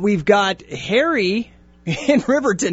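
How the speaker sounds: slow, laughing speech. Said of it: "I'm laughing 'cause I'm reading".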